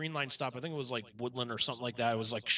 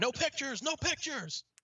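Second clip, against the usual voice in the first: put-on very high, stretched-out yelled scream; 13 semitones higher than usual. Retelling how a man across the street screamed at them: imitating a man screaming. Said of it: "we hear this guy scream".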